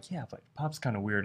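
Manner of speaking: acted whispered voice. Retelling a scene where Mordecai whispers to Rigby: imitating Mordecai whispering. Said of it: "Mordecai whispers to Rigby".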